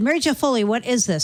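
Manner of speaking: ordinary talk, nothing marked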